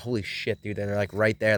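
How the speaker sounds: usual speaking voice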